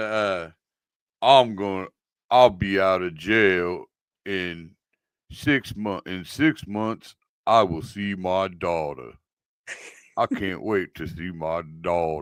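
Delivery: put-on low, slow, drawling Southern US accent. Quoting a line from Con Air, Nicolas Cage Southern accent. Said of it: "the Nicolas Cage from Con Air southern accent".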